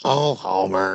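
deep cartoon mother voice. Playing around on the show, saying a line in a Marge Simpson voice. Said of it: "I just wanna do Marge voice".

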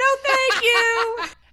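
very high, shrill, very loud yelling. Speaker recounting what they yelled back at a kid on a school bus, retelling yelling back. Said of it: "To which I yelled back".

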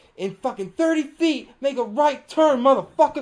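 very loud, high, bellowing sat-nav voice. Joking about a paid navigation app, speaker does Samuel L. Jackson GPS voice. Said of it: "just have Sam Jackson be like".

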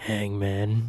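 put-on creepy voice. Retelling a brother's answer about his computer game: imitating a creepy voice. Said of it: "the creepiest way".

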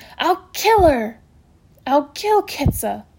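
slow, furious, ground out between gritted teeth. Narrating Amory crouched over the injured animal in sudden fury: ground out through gritted teeth. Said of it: "He ground out between his teeth".

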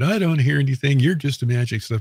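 put-on laughing tone. Retelling a co-investigator laughing at the speaker, imitating someone laughing at him. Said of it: "she starts laughing at me".

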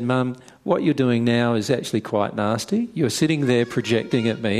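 ordinary talk

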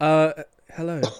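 put-on, impassive, stoic, unmoved voice. Retelling how the Vulcan reacted on screen: imitating a stoic Vulcan. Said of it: "he's just, like, stoic".

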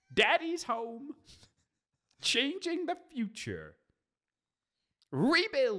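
very high, swooping squeak. Reading out a DVD chapter listing, sounding like the Wicked Witch of the West. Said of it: "You sounded more like the Wicked Witch of the West".

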